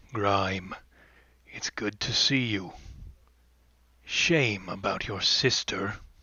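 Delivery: low, gravelly, quiet voice. Narrating a character greeting Grime, in Mama Olgra's low, gravelly voice. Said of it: "speak in a low, gravelly voice".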